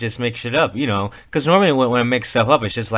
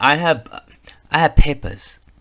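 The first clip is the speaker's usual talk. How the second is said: clumsy attempted German accent; 4 semitones higher, 4 dB louder than usual. Joking about how a curfew would be enforced, the speaker attempts a German accent. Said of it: "when I say papers like that, I'm tr- I'm trying to be German".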